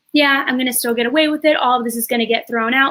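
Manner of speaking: ordinary delivery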